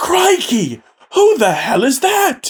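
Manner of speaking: very high British voice, swinging wide. Game narrator voicing the fake Paul Beenis as he turns around: fake Paul Beenis's British accent. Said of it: "Why are you British?".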